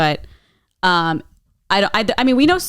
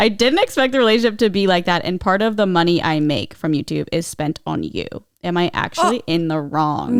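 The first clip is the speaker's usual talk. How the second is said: ordinary talk, nothing marked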